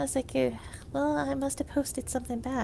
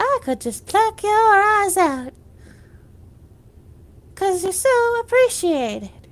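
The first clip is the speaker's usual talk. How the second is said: put-on high, loud crow character voice; 6 semitones higher, 9 dB louder than usual. A speaker recalls a bit where they played a crow: crow voice. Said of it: "where I was a crow".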